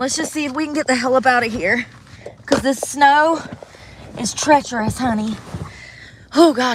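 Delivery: breathless, puffing between words. Speaker trying to get out through treacherous snow, out of breath. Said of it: "I'm out of breath".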